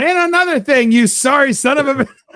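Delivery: loud, high-pitched angry yelling, rant in full swing. Acting out calling support while already yelling mid-rant: pretend yelling mid-rant. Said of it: "start yelling at them before you pick up the phone".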